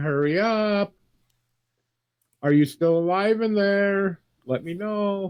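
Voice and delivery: high, drawn-out, urgent screaming. In a game, a shooter outside a door yells to those inside, screaming urgently. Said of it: "just gonna start screaming".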